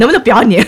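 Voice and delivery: put-on harsh, stern scolding voice. Retelling how a partner scolded them during recording: imitating a harsh, stern scolding. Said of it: "用非常苛刻严厉的语气指责我".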